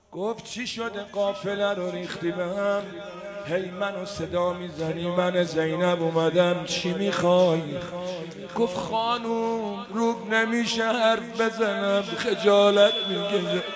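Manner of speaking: hushed soft voice.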